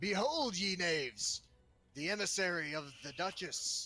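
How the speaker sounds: loud, high-pitched shout. Playing a character, the speaker calls out to the people in the scene: yelling out. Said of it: "I'm going to yell out to them".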